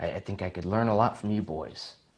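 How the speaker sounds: murmured under the breath. Recounting what a coworker said after being thanked, retold words under his breath. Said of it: "kind of under his breath".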